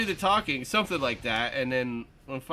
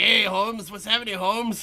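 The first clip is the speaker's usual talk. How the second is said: put-on high-pitched tough street voice with a Mexican accent; 5 semitones higher than usual. Retelling a movie scene: imitating Jonah Hill's Mexican gangbanger voice. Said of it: "he's like talking like Holmes".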